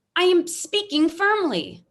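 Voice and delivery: full-on high, loud, howling scream. Arguing with someone who tells her she is screaming: screaming. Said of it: "You are screaming".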